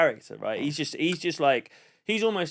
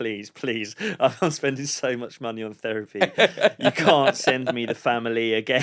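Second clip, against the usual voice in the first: mock, desperate pleading and begging voice; 3 semitones lower, 4 dB louder than usual. Retelling how the podcast co-host was begging: imitating someone begging. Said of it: "begging me".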